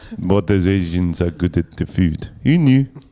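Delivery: put-on French-accented delivery. Retelling what a man said about a meal, mimicking him in a french accent. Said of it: "in a cool little French way".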